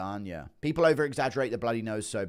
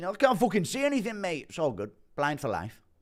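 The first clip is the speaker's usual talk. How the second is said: bullying, mocking voice with the pitch up; 7 semitones higher than usual. Joking about a fight, the speaker does an Andy Aspinall impression. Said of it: "Impression of Andy Aspinall".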